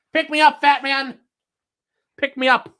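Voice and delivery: very high, loud, pushy dog voice. Playing with the dog and voicing what it thinks: voicing the dog Clyde. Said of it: "He's like".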